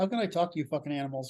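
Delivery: humorous, joking sarcasm played for laughs. Retelling an old thought about talking to other people, mock sarcastic tone. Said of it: "I'm gonna be sarcastic".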